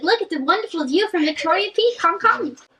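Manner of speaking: put-on sarcastic tone. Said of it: "It was really sarcastic".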